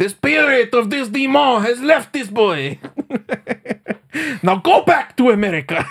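put-on very high French Canadian accent that drifts off. Acting out someone addressing a demon, in a French Canadian accent that slips away. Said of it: "That turned into a not French Canadian anymore, by the end of that impression".

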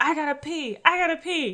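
put-on, high, frantic, desperate repeated screaming. Retelling a video of a woman in a plane aisle: imitating someone screaming. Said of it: "she's screaming that she needs to pee so bad".

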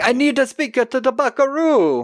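put-on thick Jamaican accent at very high pitch. Recapping a scene, do John Parker's line in his thick Jamaican accent. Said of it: "with his thick Jamaican accent".

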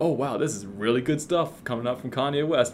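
plain

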